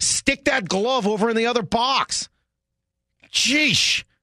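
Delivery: shouting angrily. Ranting at the team's players after a lost game: yelling at players. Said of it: "Stop yelling at me".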